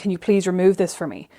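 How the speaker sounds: put-on tearful, almost crying voice. Retelling begging nail salons to remove a broken nail: retelling an almost-crying plea. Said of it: "almost crying".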